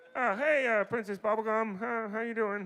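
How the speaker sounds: put-on voice, very high and belted very loud. Describing the creator of Adventure Time by doing him: Pendleton Ward impression. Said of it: "me doing an impression of Pendleton Ward ... kind of like this".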